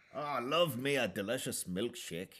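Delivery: weak, high, attempted Scottish accent, not quite landing. Speaker voicing a cartoon duck character, attempted Scottish accent. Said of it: "I can't really do a Scottish accent like I can do others".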